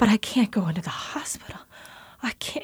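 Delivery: frightened, pleading, unvoiced whisper.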